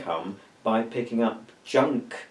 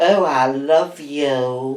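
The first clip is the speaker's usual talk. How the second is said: put-on loud drunk voice, "you" drawn out long; 3 semitones higher, 8 dB louder than usual. Speaker jokes after a few thimblefuls of alcohol, pretending to be drunk. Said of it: "Oh, I'm drunk".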